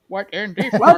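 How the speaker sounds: robotic text-to-speech voice. Taking over a line as a speech program: Microsoft Sam voice. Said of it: "have, like, Microsoft Sam take it over".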